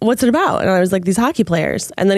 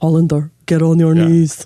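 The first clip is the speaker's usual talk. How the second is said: put-on Russian accent; 4 semitones lower than usual. Retelling a show character's line: imitating a russian accent. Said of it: "one of them has Russian accent".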